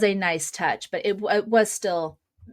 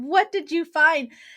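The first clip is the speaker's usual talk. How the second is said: play-acted, piercing, very high scream; 9 semitones higher than usual. Retelling how a patient yelled at a closed door: imitating someone screaming.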